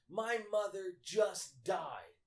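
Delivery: very slow, high, drawn-out top-of-the-lungs scream. Retelling what a woman screamed at work, imitating a scream. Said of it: "screaming at the top of her lungs".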